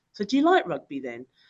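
put-on, heavily condescending, patronizing talking-down voice. Recalling panicking and what he said to her, retelling it in a patronizing voice. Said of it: "In a very patronizing voice".

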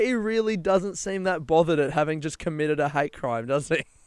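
usual speaking voice

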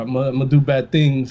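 ordinary delivery

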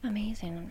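soft, hushed whisper full of awe.

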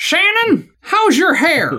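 shrill, very high, sing-song put-on yell. Imitating the weird things a woman would yell out: yelled in a put-on voice. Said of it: "the only way I could say it is in this voice. So she would basically yell out".

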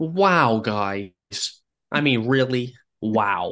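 very slow, drawn-out, stretched wows. Answering a game prompt tagged Owen Wilson: Owen Wilson impression. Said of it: "I'm gonna do a better impression".

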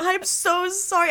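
acted, very high, freaked-out, panicked delivery. Retelling apologizing after knocking cider onto the boss: retelling a panicked apology. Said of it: "I'm like freaking out".

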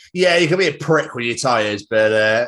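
ordinary talk

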